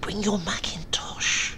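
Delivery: very soft, high, mouse-quiet hushed murmur. Narrating a woman telling her friend to come away, very soft. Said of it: "more softly than a mouse".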